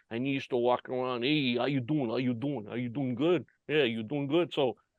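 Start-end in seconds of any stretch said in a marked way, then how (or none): 1.2-4.5 put-on thick New York–New Jersey accent, rattled off quickly. Imitating a guy who walked around the company where you worked, in a deep, heavy East Coast accent. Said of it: "heavy East Coast accent".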